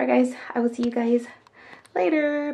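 very loud, high, out-of-breath delivery. Speaker signs off to viewers while recovering from surgery, out of breath. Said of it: "because I am out of breath".

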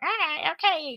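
odd, weird, very high put-on voice. Imitating an actress in the film: imitating an actress's weird voice. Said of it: "she's doing, like, a weird voice".

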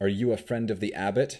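ordinary talk

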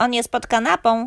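high, loud shouting. The father asks the grandmother about his son; Mi answers, shouting. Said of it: "krzyknęła mi".

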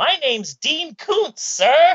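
high, loud, keen superhero sidekick voice. As a young, energetic writer asked his name, answer as Dean Koontz as a superhero sidekick. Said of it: "Dean Koontz talks like a superhero sidekick".

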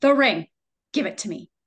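acted stern, severe voice. Retelling a woman in the story circle demanding her ring, imitating a stern voice. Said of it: "I hear her say very sternly".

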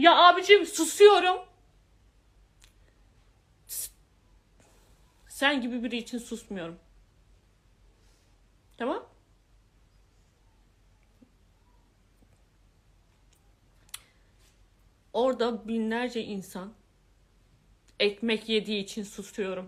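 furious and fed up, near crying. Venting to the listener about being worn down, angry to the point of tears. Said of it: "O kadar bak sinirden ağlayacağım".

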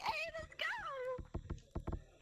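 affected squeaky voice. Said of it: "Why did you have such a squeaky voice?".

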